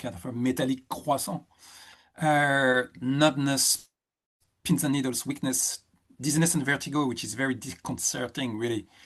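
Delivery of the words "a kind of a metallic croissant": put-on, best-effort French accent. Listing symptoms, one named jokingly: put-on French accent. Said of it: "with my best French accent".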